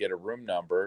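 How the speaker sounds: ordinary delivery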